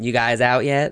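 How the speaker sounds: put-on playful teasing tone. Retelling a classmate's question to closeted friends: imitating playful teasing. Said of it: "playfully come up to us and be like".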